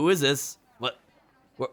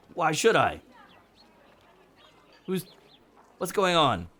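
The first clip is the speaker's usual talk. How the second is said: panicky, much higher pitch; 6 semitones higher than usual. A game master voices a character being questioned by a player, panicky. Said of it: "He looks a little panicky".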